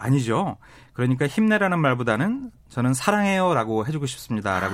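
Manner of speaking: ordinary talk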